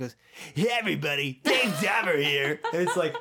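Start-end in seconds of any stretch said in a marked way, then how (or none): 0.5-2.6 loud brash shock jock radio announcer voice. Imitating a radio shock jock's intro: Dave Dahmer impression. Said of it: "You can't be on the radio with that voice anymore".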